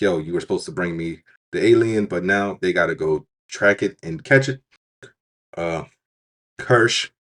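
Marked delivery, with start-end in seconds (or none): none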